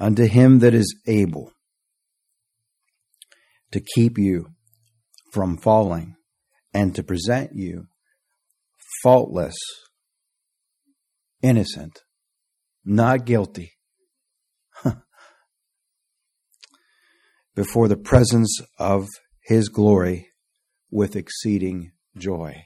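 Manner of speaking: slow, deliberate reading, each word stressed. Rereading a Bible verse aloud so nobody misses it: slow and emphatic. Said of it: "read that again and slowly emphasize".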